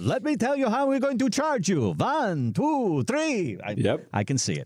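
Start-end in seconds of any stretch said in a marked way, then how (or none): 0.0-3.6 very high, swooping cartoon vampire count voice. Imagining a financial adviser's fee pitch, speaker does the Count from Sesame Street voice. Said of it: "he's the count from Sesame Street".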